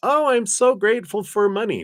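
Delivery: insincere, fake gushing gratitude, very high-pitched. Showing a pretended thank-you for money: pretending to be grateful. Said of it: "I can't pretend".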